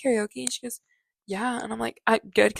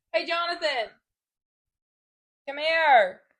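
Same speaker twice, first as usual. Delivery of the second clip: pitched-up voice calling out across a house; 6 semitones higher than usual. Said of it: "I just yelled into my microphone".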